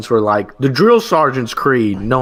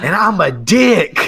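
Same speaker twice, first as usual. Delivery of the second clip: very slow, drawn-out, full-throated top-of-lungs bellow; 6 semitones higher than usual. Retelling how a trainee shouted during a creed: retelling a shout. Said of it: "shouts at the top of his lungs".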